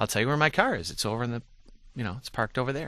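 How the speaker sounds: plain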